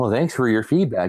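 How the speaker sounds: acted bland corporate spokesperson tone. Retelling how he answered people on the voice chat, mimicking a PR tone. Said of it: "that's the P R tone".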